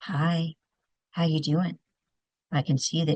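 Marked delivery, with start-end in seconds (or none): 0.0-1.8 gentle, unhurried, soft, low, calming voice. Showing how she purposely talks to someone dysregulated: soft, low, and slow. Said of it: "I will purposely talk soft, low, and slow".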